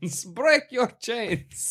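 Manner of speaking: put-on Russian accent. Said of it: "And it's in a Russian".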